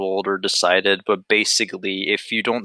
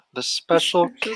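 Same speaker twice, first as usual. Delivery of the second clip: put-on very high-pitched, utterly baffled disbelief; 10 semitones higher than usual. Retelling own past reaction to a question: retelling own baffled line. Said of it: "this really specific voice that you're just, like, baffled".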